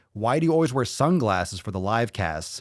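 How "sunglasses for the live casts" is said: ordinary talk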